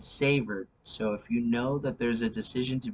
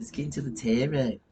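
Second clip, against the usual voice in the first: put-on, fake Australian accent. Moving on to the tarot reading, joking: put-on Aussie accent. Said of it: "That's my, um, Aussie accent".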